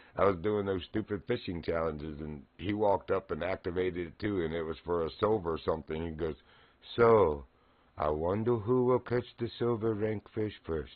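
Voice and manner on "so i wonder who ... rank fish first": put-on Dutch kid's accent, put on lightly. Retelling what a ten-year-old said at a fishing challenge, imitating his Dutch accent. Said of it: "In his little Dutch accent".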